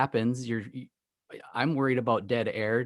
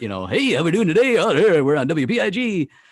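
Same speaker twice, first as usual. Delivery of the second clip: put-on broadcaster voice, much higher and louder; 6 semitones higher, 10 dB louder than usual. Describing a radio studio scene from a movie: Handsome Dan broadcaster voice. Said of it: "the broadcaster voice".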